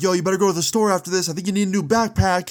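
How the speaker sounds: snide, taunting shout. Retelling one of two fighters yelling at the other, retelling a petty yell. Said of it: "He's yelling like".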